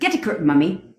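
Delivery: put-on British accent. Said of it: "but in a U K tone".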